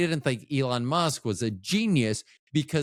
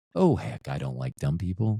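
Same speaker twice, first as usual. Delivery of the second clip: pleasant, agreeable tone, very deep; 8 semitones lower than usual. Demonstrating for listeners a voice you should use all the time, pleasant voice. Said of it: "See how much more pleasant that sounds?".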